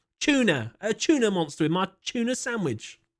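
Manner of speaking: put-on playful British accent.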